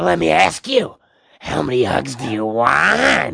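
drawn-out, rough voice. Doing an introduced impression of the Western star's famous lines: Clint Eastwood impression. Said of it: "here he is, Mister Clint Eastwood".

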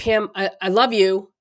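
normal talking voice

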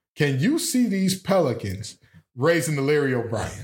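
heavily sarcastic, taunting, swooping delivery. Asking the others a question: sarcastic. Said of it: "you just sound so sarcastic".

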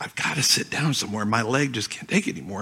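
hushed whisper, barely audible. Retelling what the wife said in a crowded restroom: imitating a whisper. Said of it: "whispers to me".

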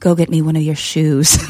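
acted gravelly, beautiful voice. Retelling what a former lover told the speaker, imitating a gravelly, beautiful voice. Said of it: "he had this gravelly, beautiful voice".

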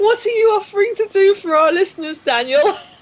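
very high voice with laughter breaking through. Asking Daniel what he is offering the listeners, laughing while talking. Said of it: "I can't even talk about this without laughing".

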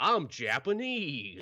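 swooping cartoon voice, pitch swinging wide. Imitating a voice actor's line in a game: Goofy voice as Date. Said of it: "he doesn't change his voice that much".

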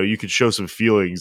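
ordinary delivery

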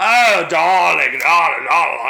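loud, grand, very slow, drawn-out delivery. Describing how a fashion figure talks, imitating her grand manner. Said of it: "She's always like".

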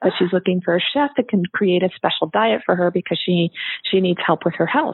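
ordinary talk

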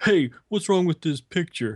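high, dopey, doltish dumb guy voice. Retelling what a stranger in a collectibles store said: imitating a stupid-sounding guy. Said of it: "did he sound that stupid?".

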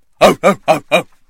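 loud, yelping dog impersonation.

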